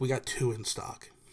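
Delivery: ordinary talk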